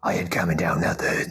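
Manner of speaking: over-the-top put-on deep voice. Retelling an actor's reply when asked to tone down his voice, over-the-top put-on voice. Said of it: "can you calm down with the voice?".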